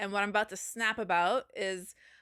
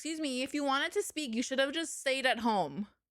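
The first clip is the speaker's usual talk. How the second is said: put-on irritated, angry snapping tone; 3 semitones higher than usual. Retelling what was said to people talking in a theater: retelling snapping at someone. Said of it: "and I snap".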